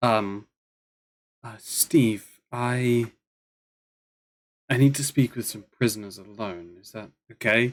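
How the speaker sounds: soft, gentle, hushed female voice. Game master voices an unseen woman speaking to steve: soft female voice. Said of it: "you hear a soft female voice say".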